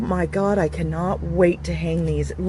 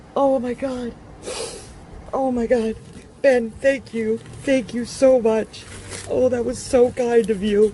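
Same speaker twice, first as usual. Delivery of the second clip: ugly crying while talking, tearful, much slower; 6 semitones higher than usual. Speaker thanks Ben for signing something for her, ugly crying while talking. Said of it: "I'm definitely ugly crying again".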